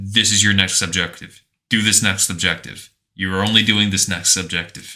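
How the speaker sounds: stern, strict, no-nonsense commanding voice. Speaker describing how a Metal Gear Solid character sounds in the sequel, imitating a strict character. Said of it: "he's like strict".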